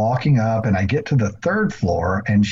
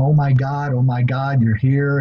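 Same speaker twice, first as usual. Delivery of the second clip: put-on crying and laughing at once, higher; 3 semitones higher than usual. Retelling a woman greeting the speaker: imitating someone crying and laughing. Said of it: "she starts crying and kinda laughing at the same time".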